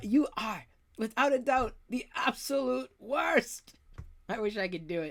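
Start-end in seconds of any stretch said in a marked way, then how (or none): 0.0-3.7 bad put-on Scottish accent, pitched higher. Quoting Fitz from Agents of Shield, horrible Scottish accent as Fitz. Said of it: "In my horrible Scottish accent".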